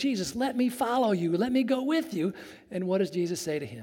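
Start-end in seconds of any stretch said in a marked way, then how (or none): 0.0-2.3 mock pleading tone. Retelling a man's plea to Jesus, acting out his begging. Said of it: "Here's a man begging".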